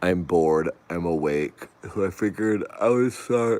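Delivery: speech broken by a yawn mid-sentence. Starting a live stream and greeting viewers, yawning while talking. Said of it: "I'm yawning".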